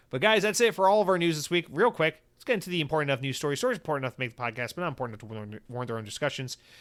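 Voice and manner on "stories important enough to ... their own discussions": very fast, soft, rushed rattle. Podcast host introducing a minor news segment, very fast. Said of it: "I try to say it so fast".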